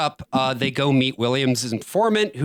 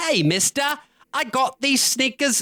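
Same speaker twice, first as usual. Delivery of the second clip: put-on very high, slow little British boy voice; 12 semitones higher than usual. Acting out a little boy in a show bragging about his sneakers: little boy voice with British accent. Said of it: "That was British".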